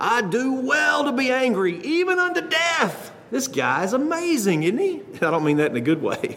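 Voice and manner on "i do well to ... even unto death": slow, pitched-up voice spoken through clenched teeth. Retelling a Bible story, voicing the prophet's answer to the Lord, through clenched teeth. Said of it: "Jonah says with clenched teeth".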